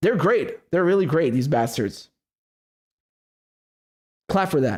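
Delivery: heavy irony, dry sarcastic mock praise. Mocking politicians after calling out their lies, sarcastic praise.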